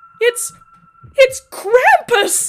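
shrill, piercing, high, loud scream of terror. Narrator reads a woman crying out as a creature appears: terrified cry. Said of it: "Mila cried. Her terrified voice".

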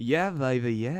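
easygoing voice through gapped teeth. Answering a request for an impression: Austin Powers voice. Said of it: "Can you do an Austin Powers impression?".

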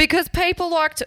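shrill, very loud, very high-pitched yelling outburst. Answering another speaker's question, yelling very loud. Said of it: "I just yelled very loud".

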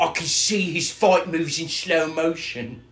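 put-on slow, drawn-out, stupid-sounding Cockney accent. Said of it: "stupid fucking Cockney accent".

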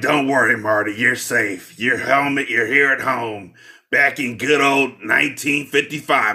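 put-on husky smoker voice. Retelling a scene where Lorraine comforts Marty, husky cigarette voice as Lorraine. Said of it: "this husky cigarette voice like".

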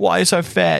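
mock shrill jeering taunt, very high and loud. Retelling a cricket sledge by an English player: imitating a player taunting. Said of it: "just ripping into him".

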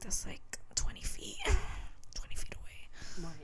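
soft, whispered, to oneself. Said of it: "in her mind, like".

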